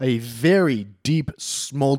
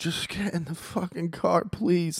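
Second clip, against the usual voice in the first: mock begging, imploring, high, drawn-out pleading; 7 semitones higher, 6 dB quieter than usual. Retelling a stepdad begging her to get in the car: imitating a man pleading. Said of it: "he's pleading with her".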